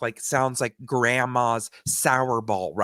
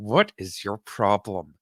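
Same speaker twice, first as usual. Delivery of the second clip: acted-out speech through gritted teeth, slower; 3 semitones lower than usual. Retelling what an annoyed companion said during the speaker's panic attack, through gritted teeth. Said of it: "through gritted teeth".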